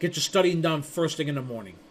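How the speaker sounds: plain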